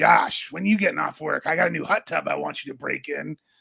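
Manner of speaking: rough, raspy, creaky chain-smoker's voice. Retelling what a woman always said to him, imitating a raspy lady. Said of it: "this raspy lady would always come up".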